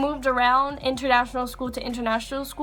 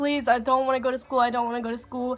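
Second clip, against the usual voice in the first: put-on crying, tearful voice. Recalling coming home crying on dad's lap, retelling a crying plea. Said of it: "came home like crying on my dad's lap".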